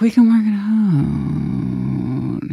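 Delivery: eerie, creepy, intense, very slow and drawn-out delivery. Imitating someone who wants to keep a deal going: imitating a soft, creepy voice. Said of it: "the voice is soft and it's a little creepy".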